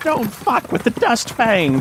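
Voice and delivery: high, swooping yell. Voicing an NPC who twirls his revolver, yelling.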